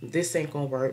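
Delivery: normal talking voice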